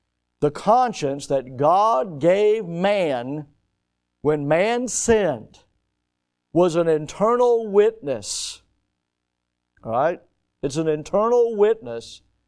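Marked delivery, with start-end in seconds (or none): 0.4-8.6 slow, deliberate, emphatic restating delivery. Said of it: "I want to say that again".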